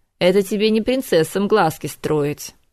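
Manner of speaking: ordinary talk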